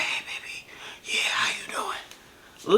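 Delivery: secretive, hushed, slow whisper. Retelling how he whispered sweetly on the phone: imitating someone whispering. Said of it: "He's whispering on the phone like".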